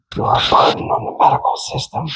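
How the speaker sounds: barely voiced, muttered whisper under the breath. Retelling what a nurse said to a patient: imitating a whisper under the breath. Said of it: "the nurse whispered under her breath".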